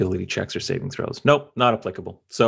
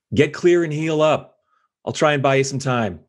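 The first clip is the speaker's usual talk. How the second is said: raised, high-pitched call, shouting; 6 semitones higher, 4 dB louder than usual. Playing a character in a fight, telling an ally to get clear: shouting to an ally. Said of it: "just shout out to".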